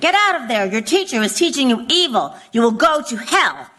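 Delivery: put-on crowd-style yelling. Describing protesters yelling at children outside a window, imitating protesters yelling. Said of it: "They yell to the children".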